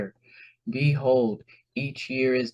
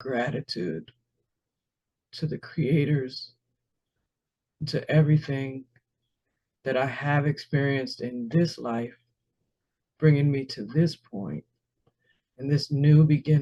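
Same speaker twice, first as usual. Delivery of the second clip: tearful, crying while talking. Giving thanks for everything experienced in this life, crying while talking. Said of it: "I'm just crying because of the gratitude".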